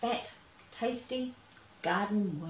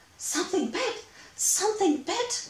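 very high, thrilled, excited crying out; 11 semitones higher than usual. A mouse fishing cries out when something bites his line, excited cry. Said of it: "Cried Nathan".

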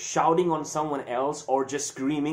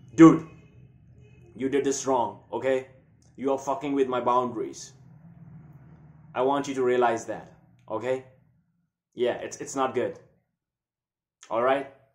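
steady, grounded, calm, firm, still anger; 4 semitones lower than usual. Demonstrating healthy anger at someone crossing your boundaries; calm, firm anger. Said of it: "like this".

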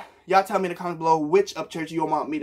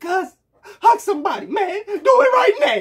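emotional voice breaking and cracking, very high-pitched; 6 dB louder than usual. Wanting everybody to love each other, urge people to hug somebody, with a voice crack. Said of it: "Sorry for the voice crack".

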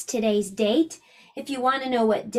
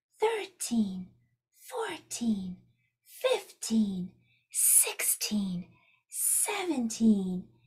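whispering, quieter; 2 semitones lower, 8 dB quieter than usual. Leading a class in counting the days of the month: whispering. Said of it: "so let's whisper".

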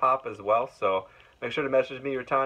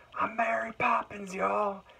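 very high, raspy, drawn-out shout; 11 semitones higher than usual. Retelling what a guest yelled out at a signing: imitating a raspy yell. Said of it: "he actually yelled out ... signature, like, kind of vo-, raspy voice".

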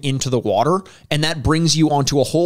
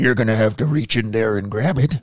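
put-on creepy old man voice, lower pitch; 4 semitones lower than usual. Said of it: "classic old man bullshit".

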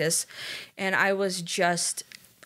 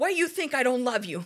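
mock angry mother, high, pissed-off voice; 6 semitones higher than usual. Retelling a parent's reply to a child's question: imitating an angry mom. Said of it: "my mom just got so pissed".

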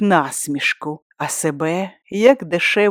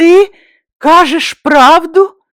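very high, loud, raised voice, quavering and trembling; 11 semitones higher, 9 dB louder than usual. Narrator reads Maya questioning her husband, trembling voice. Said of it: "перепитала тремтячим голосом".

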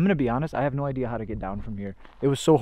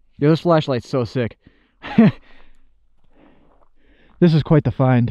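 a little out of breath, slightly winded, short of breath; 2 semitones higher, 9 dB louder than usual. Having just climbed up to the top, a little out of breath. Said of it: "I'm sorry if I'm a little out of breath".

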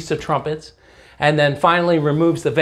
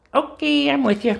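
very high, creaky, squeaky lap dummy voice; 10 semitones higher than usual. During a Bible lesson, answering the speaker as Mr. Bones, in a Mr. Bones dummy voice.

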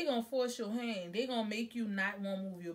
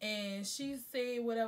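normal talking voice

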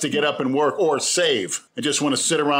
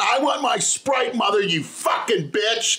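put-on child-like screaming; 8 semitones higher than usual. Telling a listener about a child at the pool; retelling a child's scream at the mother. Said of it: "Then she's screaming".

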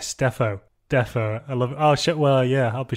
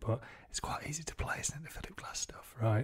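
whispered, much quieter voice; 16 dB quieter than usual. Talking about playing [name] pieces, whispering. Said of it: "I'm whispering it".

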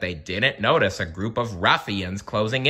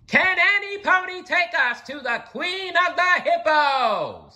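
very high, slow, joyful scream, "Hippos" drawn out. A pony bounds into a market square and calls out to the crowd, shouting gleefully. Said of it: "she shouted gleefully".

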